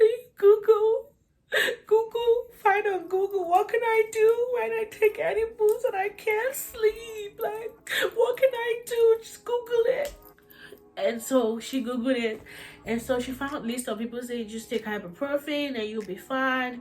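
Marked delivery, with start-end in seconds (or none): 0.0-10.1 mock crying, much higher. Retelling begging someone to Google help for sleeplessness: imitating own past crying. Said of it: "I'm literally talking and crying".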